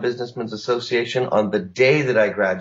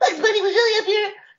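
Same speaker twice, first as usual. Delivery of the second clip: very high, squeaky childlike cartoon rabbit voice. Retelling doing a voice as a young child: child's Bugs Bunny impression. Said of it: "Bugs Bunny as a six-year-old was".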